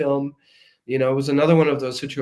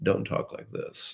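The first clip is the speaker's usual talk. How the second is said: vocal fry, creaky, lower and quieter. Giving advice on caring for your voice, demonstrating vocal fry. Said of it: "don't speak with a vocal fry".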